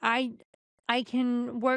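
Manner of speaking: ordinary delivery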